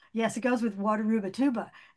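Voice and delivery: ordinary delivery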